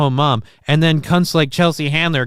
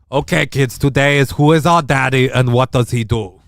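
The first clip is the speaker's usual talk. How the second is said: bad put-on Austrian accent; 2 semitones lower than usual. Addressing the kids in an Arnold Schwarzenegger Austrian accent. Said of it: "It's a horrible Arnold Schwarzenegger".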